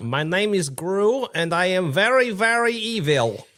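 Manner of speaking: very high, loud, drawn-out boastful delivery. Joining the joke after the other speaker's Despicable Me voice: Gru voice. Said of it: "Despicable Me voice".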